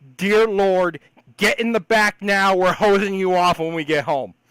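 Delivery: shrill, loud, top-of-the-lungs scream. Retelling how she screamed from inside the truck: retelling a top-of-lungs scream. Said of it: "screams at the top of her lungs".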